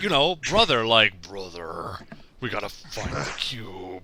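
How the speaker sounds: robotic machine-like voice. Retelling a coworker's Optimus voice from a voice-changing thing: imitating an Optimus voice. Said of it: "I'm doing the voice too good".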